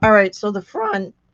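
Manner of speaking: squeaky, high voice. Speaker still recovering from surgery, talking through a project; squeaky voice. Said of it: "excuse my squeaky voice".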